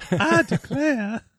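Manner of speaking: put-on Southern belle accent. Teasing someone who introduced bands on stage, in a Southern belle girl voice. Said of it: "in the Southern Belle girl voice".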